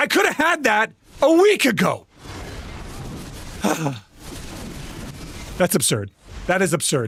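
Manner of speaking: openly angry, heated tone. Complaining after grinding for two weeks, angry. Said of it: "I'm angry".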